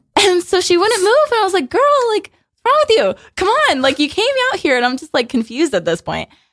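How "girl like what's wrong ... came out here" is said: loud, strained high scream. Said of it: "screaming at everybody the way I scream".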